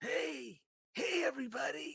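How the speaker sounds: very high, creaky, rough heavy-smoker rasp. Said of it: "He talked the way you think [name] sounds".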